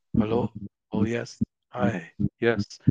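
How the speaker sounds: very slow, drawn-out English in a put-on Japanese accent. Retelling what a wrestler said, speaking in a Japanese accent. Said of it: "starts speaking English in a Japanese accent".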